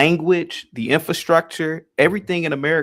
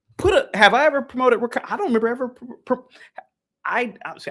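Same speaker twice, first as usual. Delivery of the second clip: high, angry stammer, stumbling over words; 8 semitones higher than usual. Denying that he ever promoted wakanda, angry stuttering. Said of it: "I'm stuttering".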